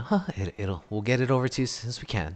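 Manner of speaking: sweet, gentle voice. Playing the same waitress calmly answering a customer once she turns back to them, in a sweeter voice. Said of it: "this loud, forty year old waitress who shouts out".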